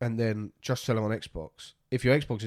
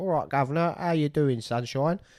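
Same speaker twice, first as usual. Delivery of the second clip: put-on stock cockney London accent, pitched up; 5 semitones higher than usual. Discussing how games portray English people, demonstrating the usual accent: put-on cockney English accent. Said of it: "games that have English people".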